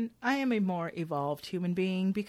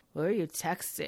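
dead-level, flat delivery with creaky vocal fry; 3 semitones lower than usual. Describing a woman's voice, the speaker imitates her asking a question in a flat vocal fry voice. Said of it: "that vocal fry in her voice, but a very flat voice".

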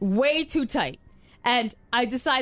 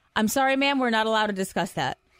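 mock-deadpan, flat delivery. Retelling what a hotel worker answered her; imitating a deadpan reply. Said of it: "Deadpan goes".

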